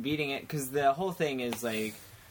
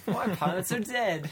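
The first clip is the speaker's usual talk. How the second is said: put-on young British accent, pitched higher; 7 semitones higher than usual. Trying out voices with others, the speaker delivers a line as young British Batman. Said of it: "Young British Batman".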